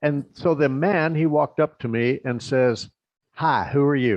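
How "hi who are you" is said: put-on funny American accent, male. Retelling what a man said when he walked up, funny american accent. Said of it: "He talks like this".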